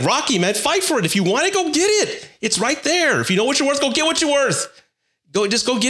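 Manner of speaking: frustrated angry shouting. Urging men who won't fight for what they want: angry yelling. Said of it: "Sorry, I yelled at you".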